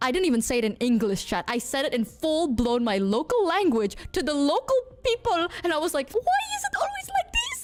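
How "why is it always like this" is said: very high-pitched rapid wail. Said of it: "the highest pitched voice".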